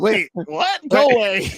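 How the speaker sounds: very slow, high, heavily dragged-out voice. Acting out a line from a bad movie, imitating the movie character. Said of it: "He literally sounds like that".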